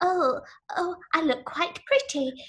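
pouty put-on voice up high. Mocking an actress's acting style: pouty Keira Knightley impression. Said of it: "the pouty and the".

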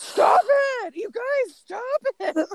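mock, very high, shrill, unkind, harsh yell. A parent retells yelling at the kids to stop, retelling an unkind shout. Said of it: "I don't think I was using a very kind voice".

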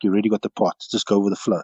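soft, hushed half-whispered aside. Retelling what Chester half-whispered at the rugby tryout: imitating Chester half-whispering. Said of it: "he whispers to me".

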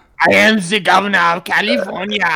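put-on squeaky, loud, belted Austrian accent. Talking about the governor of California, the speaker does an Arnold Schwarzenegger impression. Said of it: "You sounded like Arnold mouth sex to can of helium".

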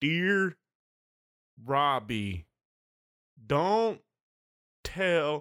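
very slow, halting, kindergarten-level reader sounding out words. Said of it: "reading it like he reads at a kindergarten level".

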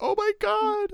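play-acted very high, weepy, sobbing wail. Retelling how the secretary in the scene starts crying: imitating someone crying. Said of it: "starts crying".

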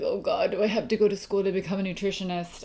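fast, flat, begrudging groan with eye-rolling tone.

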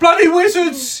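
very high, very loud, shrill, alarmed and panicked yelp. Voicing guards who see a huge crocodile appear: panicked guard voice. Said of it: "A couple of the guards nearby go".

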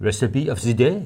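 fake French accent, slow and unhurried. Introducing the recipe of the day in a put-on french accent. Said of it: "I did that in a French accent".

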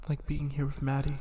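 hushed, very quiet, half-whispered aside. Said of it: "they said in a whispered voice".

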